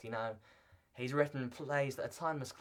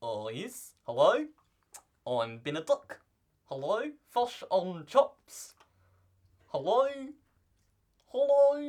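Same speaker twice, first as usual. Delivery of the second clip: very loud, high, botched New Zealand accent; 8 semitones higher, 10 dB louder than usual. Asked whether he can do a New Zealand accent, he tries one: attempted New Zealand accent. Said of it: "I always try it out like this".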